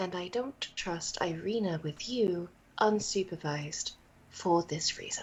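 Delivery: quiet, hushed, private whisper. Playing a guard, speaking so the other guards don't hear; whisper. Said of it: "I'm saying this in a whisper".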